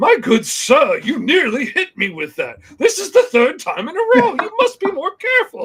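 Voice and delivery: loud, swooping, baffled, bewildered alien scientist voice. Acting out a scene of an alien being attacked with a wrench: confused alien scientist. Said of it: "him just being like".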